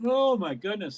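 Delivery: mid-yawn. Talking through a race while watching it, yawning. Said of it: "Sorry, I'm yawning".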